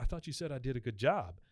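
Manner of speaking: ordinary delivery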